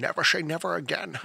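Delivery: put-on rough, creaky film-star style voice. Saying a film title for fun as Sean Connery: Sean Connery impression. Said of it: "It's fun to say as Sean Connery".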